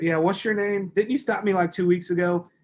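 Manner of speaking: light, playful, joking, bantering familiar tone. Recounting a woman in a back seat, retelling her joking with the man who stopped her. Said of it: "joking with him the whole freaking time".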